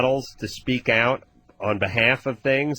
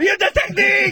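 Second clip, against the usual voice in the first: put-on fitness trainer scream, higher and louder; 6 dB louder than usual. Retelling how Tony Little corrects people: imitating Tony Little screaming. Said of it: "starts screaming at people".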